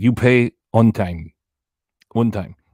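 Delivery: loud, slow, halting, struggling broken English. Retelling what he told someone, imitating broken English. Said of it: "see how good I do that voice".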